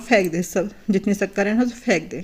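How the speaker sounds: ordinary talk, nothing marked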